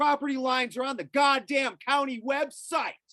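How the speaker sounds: high, loud angry yell.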